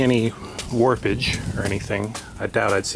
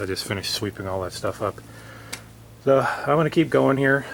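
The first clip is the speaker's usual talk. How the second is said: winded, short of breath while talking; 4 semitones higher than usual. Just after sweeping up, talking through the work while out of breath. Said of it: "Sorry I'm all out of breath".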